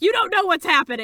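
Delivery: very loud, fed-up, exasperated yell. Retelling being shushed while watching a show, re-enacting yelling at the screen. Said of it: "I'm like yelling at the screen".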